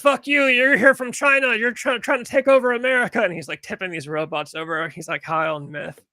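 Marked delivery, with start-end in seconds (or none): 0.0-3.2 very high, shrill, loud yelling. Retelling a clip of tipping robots over: imitating Rat Dick Ralph yelling. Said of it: "he was yelling".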